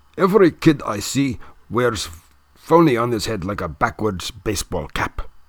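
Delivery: put-on thick, heavy German accent. Reading a story aloud, the narrator voices Hans Castorp with a thick Teutonic accent. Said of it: "says in his thick Teutonic accent".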